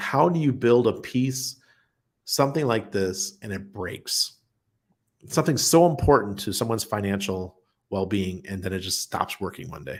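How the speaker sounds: usual speaking voice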